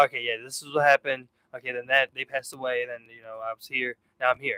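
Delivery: glazed-over, dead-even flat monotone. Retelling how they recount a loss when it comes up: imitating own monotone telling. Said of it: "it's, like, monotone".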